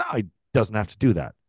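ordinary talk

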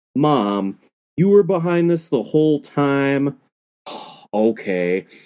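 play-acted, slow, dry, unreactive deadpan delivery. Retelling what he said to his mom, imitating the flattest tone ever. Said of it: "he goes in the flattest tone ever".

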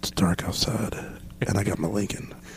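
put-on movie star drawl. Answering a request for an impression, voicing Matthew McConaughey's thoughts. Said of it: "his thought right now where he's like".

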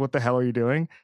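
ordinary talk

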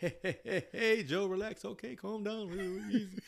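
slow, soothing, calm, gentle delivery. Retelling a comedian's bit where Obama tells Joe to relax: imitating Obama calming someone. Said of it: "so he fools you with it 'cause he's nice".

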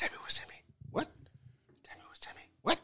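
put-on whisper. Retelling how someone said a line, imitating someone whispering. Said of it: "you hear his motherfucker whisper that".

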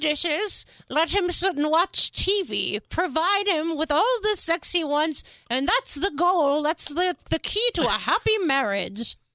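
high, slow voice with words drawn out. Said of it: "speaking of that voice I just did".

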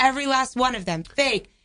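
ordinary talk, nothing marked

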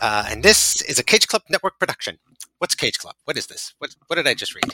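loud, wired, hyped-up patter. Reading the podcast intro when asked: Martin Scorsese impression. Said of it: "That's my Marty of the era".

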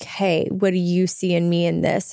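ordinary delivery

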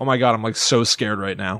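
mock-scared in a dead, flat voice. Imitating one of a group claiming to be scared, mock-scared in a dead, flat voice. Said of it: "Just dead eyes".

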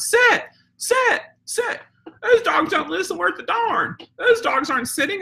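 mock, very high, yelled holler. Retelling a guy yelling at the trained dogs from down the block: imitating a guy yelling. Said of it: "he starts yelling".

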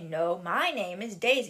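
ordinary talk

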